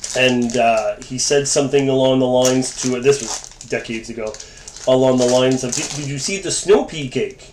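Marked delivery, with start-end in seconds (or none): 5.7-7.3 ridiculously heavy, laid-on put-on French accent. Retelling a story about a coworker's words: imitating a ridiculous French accent. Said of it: "a ridiculously French accent".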